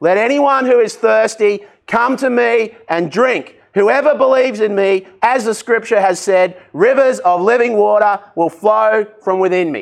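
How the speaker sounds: loud yelling out. Quoting a scripture passage the way he yelled it out: retelling a yell. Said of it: "He yelled it out".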